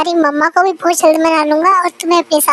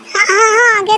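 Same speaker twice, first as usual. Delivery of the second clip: high, shouty, half-shouted burst; 5 semitones higher than usual. Asked to say properly whether they understood, a character answers: shouting. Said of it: "तुम इतना चिल्ला क्यों रहे हो?".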